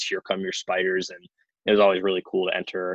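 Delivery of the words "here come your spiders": ordinary talk, nothing marked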